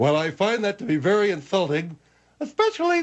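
high-pitched, squeaky cartoon animal voice. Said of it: "that squeak voice of yours".

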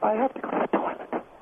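unvoiced whisper under the breath. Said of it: "You don't have to whisper".

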